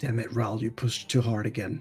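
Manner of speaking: quiet mutter under the breath. Voicing a character's reaction in a story, muttered under his breath. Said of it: "under his breath".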